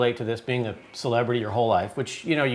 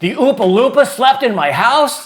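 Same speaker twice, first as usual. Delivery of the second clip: very high, shrill, loud, top-of-the-lungs screaming shout; 12 semitones higher, 11 dB louder than usual. Retelling what a child said on hearing the news: imitating a scream at the top of his lungs. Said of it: "He screams at the top of his lungs".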